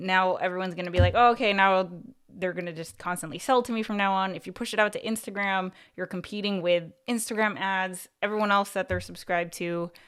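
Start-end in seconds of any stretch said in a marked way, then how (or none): none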